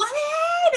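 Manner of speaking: put-on very high, very loud, shrill children's yell. Retelling how the kids bang on the locked doors: imitating kids screaming. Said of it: "they'll start screaming".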